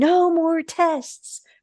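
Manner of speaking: very high, shrill, dramatic overacted screaming. Retelling a movie scene where the mom screams: imitating a scream. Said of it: "she just starts screaming".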